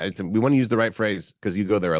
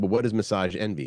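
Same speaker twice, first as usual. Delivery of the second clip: normal talking voice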